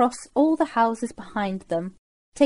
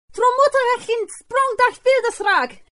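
sudden, very high-pitched shouted outburst; 11 semitones higher than usual. Someone behind the group suddenly calls out a foreign phrase, shouting. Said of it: "Someone shouted from behind them".

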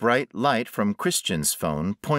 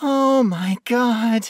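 very high, raised, whining whimper; 13 semitones higher, 5 dB louder than usual. Narrator reads a woman who just kicked something away down the hall: whimpering. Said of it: "she whimpered".

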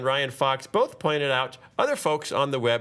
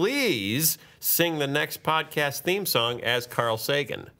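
normal talking voice

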